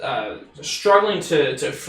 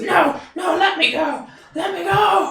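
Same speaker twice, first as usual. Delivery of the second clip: panicked screaming, higher; 14 semitones higher than usual. Voicing a restrained sailor struggling to break free: screaming sailor struggling free. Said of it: "he says".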